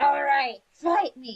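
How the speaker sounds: loud, high-pitched stock fantasy dwarf shouting. Game master voices a dwarf casting magic; shouting dwarf voice. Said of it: "the typical dwarf like".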